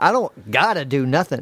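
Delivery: ordinary talk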